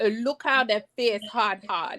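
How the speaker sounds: put-on West Indian accent, woman's voice. Quoting what Miss R V said, in her West Indian voice. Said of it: "She said in her West in her West Indian voice".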